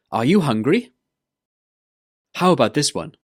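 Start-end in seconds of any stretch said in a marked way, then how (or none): 0.1-0.9 pitch climbing on "hungry", question tune. Intonation lesson, a question ending with rising pitch on 'hungry'. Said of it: "The intonation goes up".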